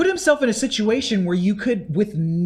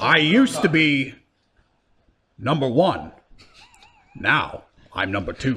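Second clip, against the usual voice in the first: slow, deliberate, drawn-out, swooping famous-actor voice; 7 semitones lower than usual. Trying out an impression for the others: Patrick Stewart impression. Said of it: "let me try my Patrick Stewart on".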